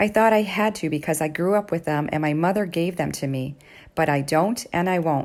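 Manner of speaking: ordinary talk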